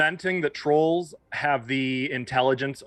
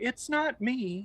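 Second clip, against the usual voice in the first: put-on wounded voice, higher and quieter; 11 semitones higher, 6 dB quieter than usual. Imagining what Loki would say, imitating Loki's wounded voice. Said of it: "in a very wounded voice".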